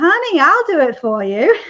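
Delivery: put-on loud, swooping New Hampshire American accent. Retelling a friend's offer to illustrate the book: imitating Caroline's American accent. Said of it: "in her American accent".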